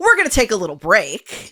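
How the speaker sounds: put-on voice with a little flair. Announcing a break in the show, doing a Colton voice. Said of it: "I was trying to do, like, a Colton voice".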